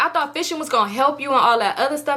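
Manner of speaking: ordinary talk, nothing marked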